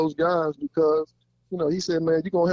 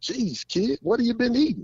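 put-on light Irish accent, pitched up; 7 semitones higher than usual. Retelling what he said when the speaker walked into his office, light Irish accent. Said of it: "he had that little Irish accent".

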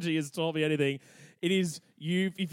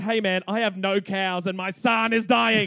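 mock angry tone, louder; 3 semitones higher, 5 dB louder than usual. Retelling how the angry people complained to the chief: imitating angry villagers. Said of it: "the people are pissed".

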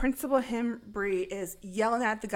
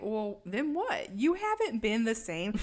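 normal talking voice

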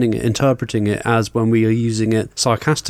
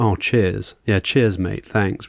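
ironic, sarcastic, insincere tone; 4 semitones lower, 3 dB quieter than usual. Showing how cheers can be used: sarcastic thanks. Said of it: "now sarcastically".

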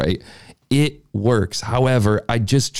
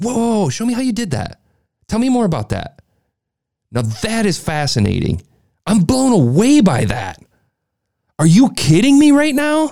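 very high, gushing, amazed, with swooping pitch; 10 semitones higher, 3 dB louder than usual. Advising interviewers to study the greats, imitating Fallon's excited disbelief. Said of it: "that type of disbelief and excitement".

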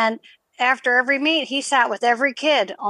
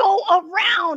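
put-on screaming, pitched higher; 7 semitones higher than usual. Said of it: "He's like".

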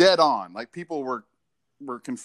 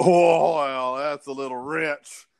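mock scoffing tone. Speaker retells how a man scoffed at his reply: imitating a scoff. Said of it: "he scoffed at that".

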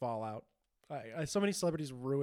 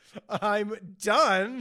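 put-on upset voice, higher and louder; 7 semitones higher, 11 dB louder than usual. Acting out an adult announcing he soiled himself: imitating someone super upset. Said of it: "Just super upset".

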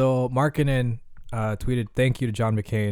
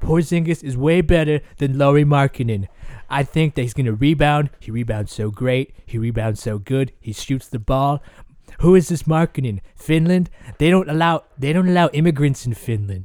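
put-on voice with a lisp, higher and louder; 4 semitones higher, 7 dB louder than usual. Comparing basketball players in an impression: Donald Trump impression. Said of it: "really good Trump".

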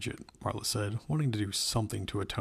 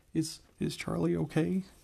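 worried, anxious, high-pitched delivery; 7 semitones higher than usual. Jason, having run to catch up, asks Marla about Charlie, anxious. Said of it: "He said anxiously".

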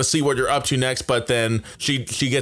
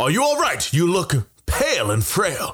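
high character voice with wide swooping pitch; 5 semitones higher than usual. Voicing Lightstrike, who turns a young elf around: Lightstrike character voice. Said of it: "and he says".

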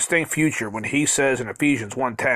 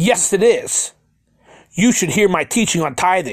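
mock livid, indignant, heated angry retort; 4 semitones higher, 4 dB louder than usual. Recounting what his ex-pastor said to him, imitating an angry pastor. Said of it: "With an angry voice".

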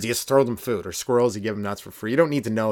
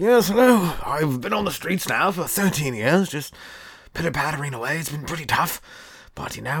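put-on English accent, pitched higher; 5 semitones higher than usual. Imagining how an english homeless man would talk: put-on english accent. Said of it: "You never met an English dude like".

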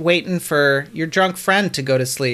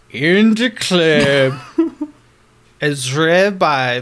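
mock drunk storyteller voice. Answering a request to show it, reading a title: drunk Morgan Freeman voice. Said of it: "What would that sound like".

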